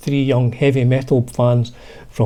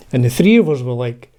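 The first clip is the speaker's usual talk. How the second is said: usual speaking voice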